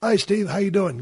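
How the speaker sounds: put-on high British-accented voice. Phoning another wrestler for advice, retelling his greeting: Chris Adams British accent. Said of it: "A British accent".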